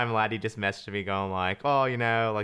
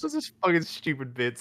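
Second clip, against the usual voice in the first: high, crying-laughing, through tears of laughter; 5 semitones higher than usual. Reacting to a joke the others keep going with: crying laughing. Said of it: "I'm just crying laughing".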